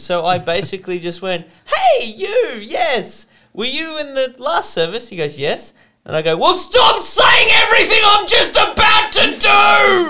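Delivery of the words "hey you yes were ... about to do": very loud, high-pitched, drawn-out shout. Retelling confronting a man from the last service, retelling a shout. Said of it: "You peaked out the microphone a little bit there".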